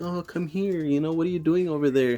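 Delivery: spooky put-on little girl voice, high and creepy. Retelling how someone spoke to creep a man out, in a creepy little girl voice. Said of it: "like little girl creepy voice".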